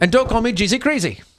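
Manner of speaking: very high, jokey fake New Zealand accent. A dad objects to a nickname from his child, in a put-on new zealand accent. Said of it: "You sounded like um the New Zealand guy".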